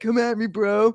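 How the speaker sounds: mocking sarcastic tone. Mocking how a commenter sounded: sarcastic imitation of a challenge. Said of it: "That's what it sounded like to me".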